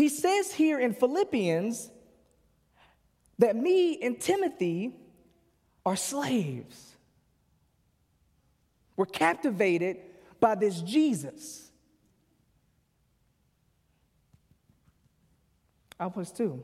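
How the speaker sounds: getting choked up. Speaker teaching from Philippians, getting choked up. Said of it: "I'm like getting choked up".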